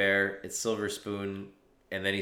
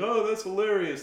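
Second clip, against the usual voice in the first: mock, very high, hyena-like cackling laugh-talk; 12 semitones higher, 3 dB louder than usual. Act out the reaction to a story about stage time, imitating Joe Rogan laughing like a hyena. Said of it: "is just sitting there laughing like a fucking hyena".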